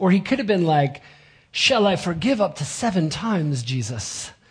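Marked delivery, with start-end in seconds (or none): 1.5-4.3 earnest, pious, holier-than-thou, self-righteous tone. Retelling someone asking Jesus about forgiving seven times, mock-pious tone. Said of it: "Very piously stating".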